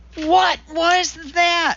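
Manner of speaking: sudden high gasp, caught breath. Narrator reading Walter reacting to the broadcast, gasped. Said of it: "Walter gasped".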